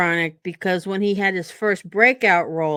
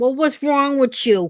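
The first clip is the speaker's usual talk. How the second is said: mock pitched-up New Jersey attitude voice; 5 semitones higher than usual. Describing how everyone in the family talks, with a mock Jersey attitude. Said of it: "kind of attitude".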